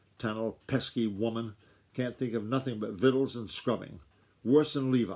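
ordinary delivery

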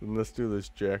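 plain reading voice

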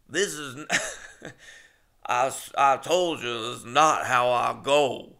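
put-on halting, very slow old man's voice. Retelling an audition tape, trying a film impression: old man from Big Fish impression. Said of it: "I tried that old man from, uh, Big Fish".

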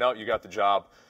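normal talking voice

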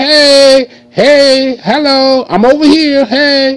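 high, very slow, stretched-out calling. Acting out a little girl trying to get someone's attention: little girl calling out. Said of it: "And then the little girl like".

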